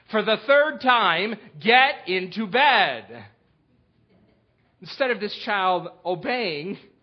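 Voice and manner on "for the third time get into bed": stern, raised, slow voice with slight edge. A parent retells telling a child, for the third time, to get into bed, with edge. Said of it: "with a little bit of edge in my voice".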